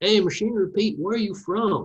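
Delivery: put-on, high, good-old-boy southern drawl. Retelling farmers at a North Carolina auction asking where he's from, Southern drawl impersonation. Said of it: "I apologize for my southern drawl and, and impersonation".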